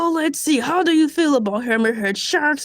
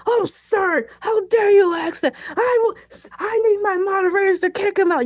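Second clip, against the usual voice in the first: put-on indignant, fake outraged tirade; 5 semitones higher than usual. Reacting to a chat question about shark meat: mock angry yelling. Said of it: "I'm sorry for yelling at you".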